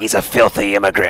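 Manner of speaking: sinister, wicked, evil-sounding voice. Quoting what the evil voice in a game character's head says: evil voice. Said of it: "the evil voice in my head says".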